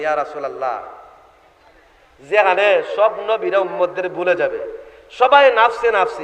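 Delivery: ordinary delivery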